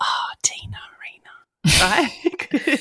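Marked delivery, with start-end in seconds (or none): 0.0-1.8 hushed whispered murmur under the breath. Retelling how an aunt greeted TV performers: imitating Auntie Leslie under her breath. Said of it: "you'd hear her under her breath go".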